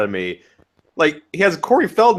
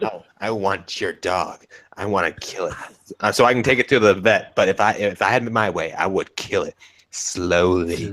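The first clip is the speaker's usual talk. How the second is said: put-on low, slow, relishing, sadistic old woman voice; 7 semitones lower, 3 dB quieter than usual. Retelling what an old lady said about the speaker's dog; imitating a sadistic old lady. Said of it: "most sadistic old lady ever because she's like".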